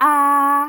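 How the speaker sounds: level, flat, stretched first tone on ah. Teaching how to read the first tone, flat, stretched ah. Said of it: "it is flat. It does not go down. It does not go up, and then you stretch it".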